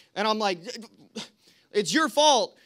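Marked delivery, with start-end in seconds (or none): 1.7-2.5 acted-out cross, angry, accusing tone. Recounting a WhatsApp call with old people who couldn't hear, retelling getting really mad. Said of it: "I'm getting really mad".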